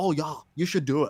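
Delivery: put-on Australian accent. Retelling what Xavier said behind the scenes, imitating Xavier's Australian accent. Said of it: "Xavier Wilson impression".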